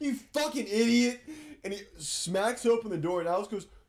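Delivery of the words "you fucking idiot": high-pitched, loud, raging screaming outburst. Retelling walking out while a friend keeps yelling: imitating Peter screaming. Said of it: "while Peter's screaming".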